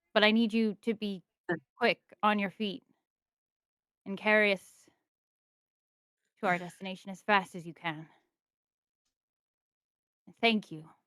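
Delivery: soft, hushed whisper. Role-play character urging the wagon horses to hurry: whispering to the horses. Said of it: "whispering to the horses".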